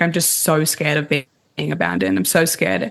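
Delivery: ordinary talk, nothing marked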